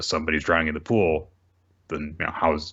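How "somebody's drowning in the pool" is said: plain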